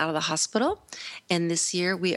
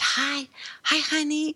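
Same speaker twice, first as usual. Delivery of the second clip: put-on whisper, much higher; 10 semitones higher than usual. Recalling what Mike said when he came in, retelling a whispered greeting. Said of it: "he whispered".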